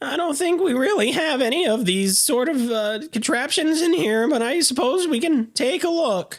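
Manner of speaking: high-pitched cartoon character voice. Retelling what a man said while they looked around; Morty voice. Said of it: "he's like Morty from Rick and Morty".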